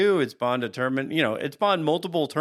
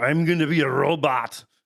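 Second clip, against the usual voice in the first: put-on movie cyborg voice. Mocking how the cyborg in the movie talks: Arnold Schwarzenegger impression. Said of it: "a cyborg who talks like this".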